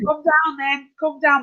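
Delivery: toned-down, mild shouting. Retelling a heated online argument, imitating Jupiter shouting. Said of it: "you hear Jupiter just shouting".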